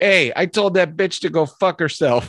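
blunt, gruff military voice. Retelling a friend's retirement-video impression of the sergeant taking a phone call: imitating the sergeant on the phone. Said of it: "my buddy did an impression of him".

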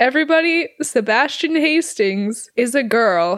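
slow, drawn-out megaphone announcer voice. Retelling a principal announcing on a megaphone: imitating a megaphone announcement. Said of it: "gets on his megaphone and is like".

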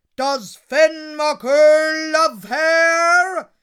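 thunderous, very loud, booming giant voice. Reading a story aloud, the giant speaking at the door: booming giant voice. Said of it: "the great voice boomed above her".

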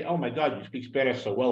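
ordinary talk

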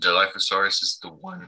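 breaking voice, cracking mid-line. Explaining something to listeners who may not know it, voice cracking. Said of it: "my voice cracked".

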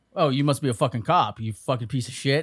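mock angry, pissed-off male voice. Retelling what a guy said while a cop stared him down, imitating an angry guy. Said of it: "the guy's getting pissed off".

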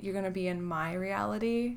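ordinary talk, nothing marked

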